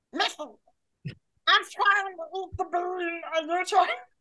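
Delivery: botched attempt at high cartoon duck voice. Trying a Donald Duck voice after being asked to hear it: attempted Donald Duck voice. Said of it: "let's hear it. I'll, I'll try it".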